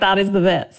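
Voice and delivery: normal talking voice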